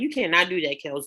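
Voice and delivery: ordinary talk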